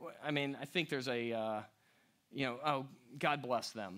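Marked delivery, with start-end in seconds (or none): 2.6-4.0 put-on, extremely dismissive, lower and quieter. Acting out how someone says a blessing: mock extremely dismissive tone. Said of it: "in, like, an extremely dismissive way".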